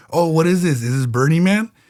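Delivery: ordinary delivery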